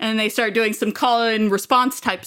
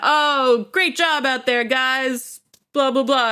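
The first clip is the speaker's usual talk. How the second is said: slow, sneering, snotty sarcasm; 2 semitones higher than usual. Retelling how the professionals rubbed in the loss, in a mock-sarcastic, snotty tone. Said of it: "being sarcastic and snotty".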